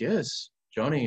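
put-on Colombian accent. Speaker retells a priest's reply to him, in a put-on colombian accent. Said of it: "I'm going to do the Colombian accent that he does".

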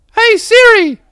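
very high, loud, silly put-on dumb voice. Testing whether Siri responds to a put-on voice, the speaker uses a dumb voice. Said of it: "she knows when I'm doing a dumb voice".

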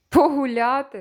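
jeering, scornful tone. Narrator reads the hare answering the hedgehog; mocking. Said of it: "запитав заєць глузливо".

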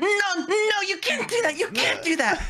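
acted, very high, slow, drawn-out screaming. Retelling how a girl in line stopped the speaker: imitating a girl screaming. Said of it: "this girl screams at me".

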